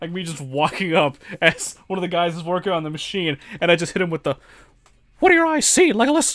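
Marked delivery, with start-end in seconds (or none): 5.2-6.4 very high-pitched, loud cartoon voice. Retelling walking up to a coworker at work: Mickey Mouse voice. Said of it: "say the most unhinged shit in a Mickey Mouse voice".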